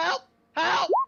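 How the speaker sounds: screaming. Being dragged out of a pit in the game: screaming for help. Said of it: "I'm screaming as I'm being dragged".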